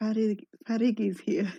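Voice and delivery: whispered line in a put-on character voice. Voicing a character who whispers to Jack: whispering in character. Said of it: "Laura's just gonna whisper to Jack".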